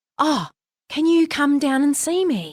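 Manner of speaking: whispered. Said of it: "and he was whispering".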